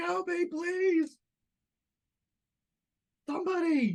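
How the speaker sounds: very high, slow, drawn-out abject groveling. A player's character, pounced on by Kaida, groveling. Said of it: "I'm like groveling".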